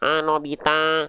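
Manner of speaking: cartoonish nasal voice. Explaining pronunciation, demonstrating a nasal sound to avoid, in a Suneo voice. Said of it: "Atau suara Suneo".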